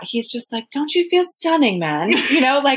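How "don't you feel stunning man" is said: terrible, clumsy fake British accent. Quoting a man who talks to everybody like that, in a terrible British accent. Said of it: "Sorry for the terrible British accent".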